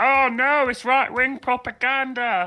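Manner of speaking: sneering, mocking back-of-throat voice, pitched way up. Making fun of someone's voice, as the speaker always does: mocking throaty voice. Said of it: "I like to push it to the back of the throat".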